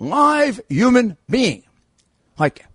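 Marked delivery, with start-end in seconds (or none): 0.0-1.6 loud, yelled shouting. Retelling yelling for a live person on the phone: imitating own past yelling. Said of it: "I used to yell".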